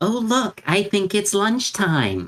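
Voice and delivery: very loud, very high swooping sing-song call. Announcing lunch in character with fresh ham to lure others: very loud. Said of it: "say very loudly".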